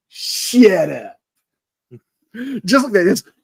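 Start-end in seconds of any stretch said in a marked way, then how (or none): 0.2-1.2 put-on long, stretched, drawn-out Brooklyn accent on "shut up". Retelling a doctor's line to his assistant, drawn-out Brooklyn accent. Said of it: "he extends it like he's from Brooklyn".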